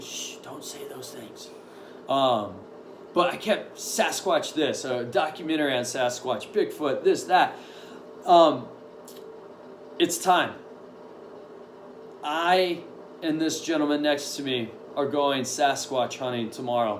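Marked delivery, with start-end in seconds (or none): 0.0-1.5 very soft hushing "shh". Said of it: "They're like".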